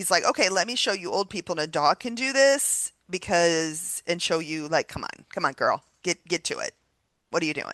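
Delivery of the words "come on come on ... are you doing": put-on sarcastic taunting, faster. Acting out her higher power urging her on while she was scared; mock-sarcastic taunting. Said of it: "my higher power is very sarcastic".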